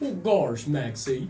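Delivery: low, silly put-on cartoon dog voice. Still joking about Fortnite, the speaker keeps going with a Goofy impression. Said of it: "You don't like my impression?".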